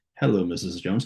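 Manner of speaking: mechanical, machine-like, robotic reading. Coaching on reading a manual, showing how not to sound: reading like a robot. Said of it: "don't read it like a robot".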